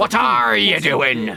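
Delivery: very loud, rough, high pirate-voice yell. Doing an impression while trying accents: Captain Barbossa impression. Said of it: "Do my Captain Barbossa impression".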